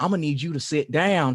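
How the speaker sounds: put-on thick, heavy southern drawl. Retelling what a man told the speaker, who was pacing from the cold, imitating thick southern drawl. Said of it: "He had like a thick southern drawl".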